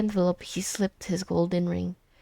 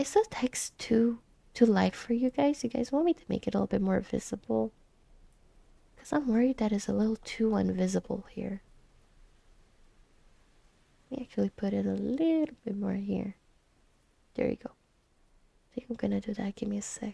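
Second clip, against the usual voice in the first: hushed whispering; 4 dB quieter than usual. Speaker asking viewers whether the on-screen text is visible, whispering. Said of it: "if I talk in my normal voice".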